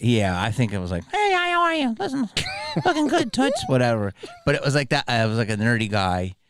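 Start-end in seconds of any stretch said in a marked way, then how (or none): 1.1-3.6 puppet voice, very high, sing-song and swooping. Asked whether they did the voice, the speaker retells the puppet's lines in the puppet's voice. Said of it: "Did you do the voice?".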